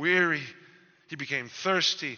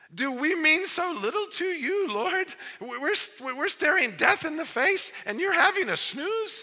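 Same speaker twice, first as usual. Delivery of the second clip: put-on terrified cry, much higher, louder; 13 semitones higher, 3 dB louder than usual. Voicing the disciples crying out to a sleeping Jesus, retelling a terrified outcry. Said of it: "the terror in their voices".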